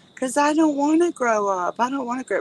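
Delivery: mock sobbing little kid voice, high, tearful. Recalling a girl crying on every birthday, imitating a child crying. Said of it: "she would like through her tears".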